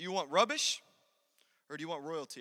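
loud, failed attempt at British accent that slips. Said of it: "I wanted to say it in a British accent".

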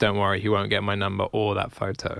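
ordinary talk, nothing marked

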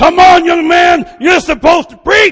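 booming shout, very loud and very high. A preacher recalls a churchgoer shouting back during his sermon, retelling a booming call-out. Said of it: "boom, back at me".

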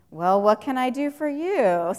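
mildly sarcastic, dry, helpful-sounding tone. Imagining how Jesus answered two disciples' request: sarcastic Jesus. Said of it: "Sarcastically, almost".

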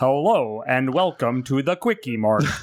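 slow, put-on American accent. Recalling a Simpsons episode, imitating Apu's fake American accent. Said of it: "he puts on an American accent".

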